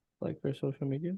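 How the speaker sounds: hushed, very quiet, barely-there half-whisper. Answering another speaker's pointed questions, half-whispering. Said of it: "Why are you whispering?".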